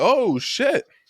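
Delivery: high-pitched loud yell. Retelling his reaction to a wrestling knee: imitating his own loud yell. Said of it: "I yelled that loud as hell".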